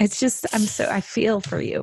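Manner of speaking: weeping while speaking. Hearing a guest's story about their child, the listener responds while crying. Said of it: "Now I'm fully crying".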